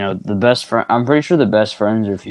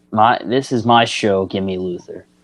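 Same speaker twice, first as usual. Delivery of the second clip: normal talking voice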